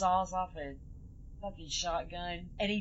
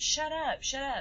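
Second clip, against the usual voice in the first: exasperated, fed-up, frustrated tone with pitch raised; 8 semitones higher, 3 dB louder than usual. Speaker retells a woman dragging a screaming stabbed man, mock-frustrated. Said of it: "and then she gets frustrated".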